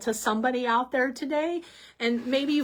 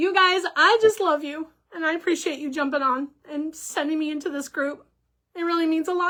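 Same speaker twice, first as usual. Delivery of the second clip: crying through the words, tearful and choked up; 4 semitones higher than usual. Live-stream host thanking viewers who joined the group: crying. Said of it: "Sorry, I'm crying".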